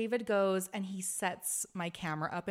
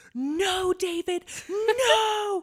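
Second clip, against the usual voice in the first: shrill, very high, very loud scream; 12 semitones higher, 11 dB louder than usual. Retelling the filmed moment of someone's engagement speech, acting out screaming no. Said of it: "I am screaming".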